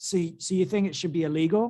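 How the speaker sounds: plain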